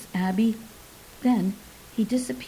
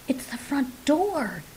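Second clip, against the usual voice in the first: words hissed out sharply; 4 semitones higher than usual. Reading a story, the narrator voices a companion who hears the front door: hissed. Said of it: "hissed Abby".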